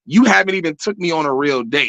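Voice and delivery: ordinary talk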